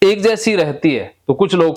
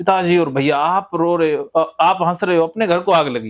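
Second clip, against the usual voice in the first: plain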